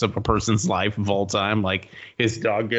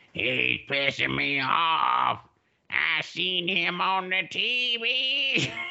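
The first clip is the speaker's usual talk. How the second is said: put-on very slow, high, swooping, drunk old crone voice; 8 semitones higher, 5 dB quieter than usual. Retelling a drunk lady cursing in the corner at a show: imitating a drunk old crone cursing. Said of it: "turned into some kind of ancient fucking sea crone".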